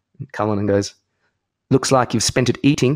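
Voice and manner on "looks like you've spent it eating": put-on movie villain voice. Retelling a cricketer's reply to a bowler: Lethal Weapon 2 villain voice. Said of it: "He's in Lethal Weapon two, it sounded like".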